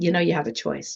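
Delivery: put-on very bland, plain, neutral voice. Retelling an inner voice that spoke in a low moment: very bland, neutral voice. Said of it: "Just very bland, very neutral".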